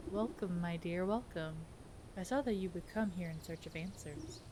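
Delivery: low, sly, scheming snake-like voice. Streaming a game, the serpent seer welcomes the approaching visitor, fortune-telling serpent voice.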